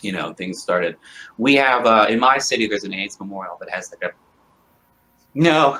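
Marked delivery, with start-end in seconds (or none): 1.4-5.8 choked up, words faltering. Guest answering an interviewer's questions, getting choked up. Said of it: "I'm getting all choked up".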